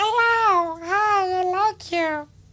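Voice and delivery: drawn-out, very high, very slow mocking squeak. Mocking a clip by quoting the brother: mocking high voice. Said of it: "And the eunuch is like".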